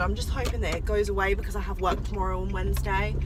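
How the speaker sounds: normal talking voice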